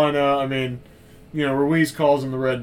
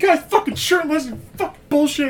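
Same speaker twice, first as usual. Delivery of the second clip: put-on very high-pitched, shrill yelling; 14 semitones higher, 3 dB louder than usual. Acting out what a man yells at another after they get off the motorcycles, retelling a yell. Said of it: "He's just yelling at him and shit".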